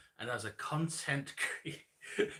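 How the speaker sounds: slow, laughing, barely keeping a straight face.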